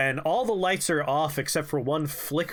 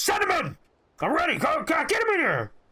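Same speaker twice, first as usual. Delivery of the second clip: shrill, furious, impatient, very angry barked outburst; 13 semitones higher than usual. Telling about two brothers running a company, voicing one over the intercom, imitating a very angry voice. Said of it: "a very angry voice goes".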